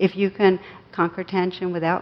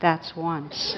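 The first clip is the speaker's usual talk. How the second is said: quiet, softly spoken, quieter than before; 2 semitones lower, 4 dB quieter than usual. Retelling his story, the narrator voices his wife answering his protest, quiet. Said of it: "she looked at me and quietly".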